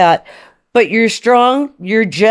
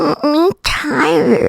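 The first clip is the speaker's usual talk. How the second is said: cute put-on creature voice, higher pitched; 5 semitones higher than usual. Doing a shy cute voice into the speaker: Labubu voice. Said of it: "it's my Labubu voice".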